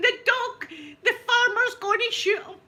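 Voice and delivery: very high-pitched, loud, shrieked scream. Retelling screaming that the farmer will shoot the dog: retelling a scream. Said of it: "I'm screaming".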